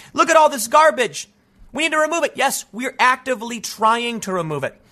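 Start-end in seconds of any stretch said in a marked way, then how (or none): 0.2-2.3 high, screaming voice. Acting out what a screaming protester might say: imitating someone screaming. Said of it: "They might be screaming".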